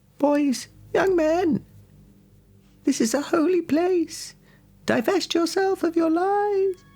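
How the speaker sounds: very high, slow, whimpering woman's voice. Voicing a one-legged woman slowly approaching the players: whimpering woman's voice. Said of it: "hear a bit of whimpering and, like".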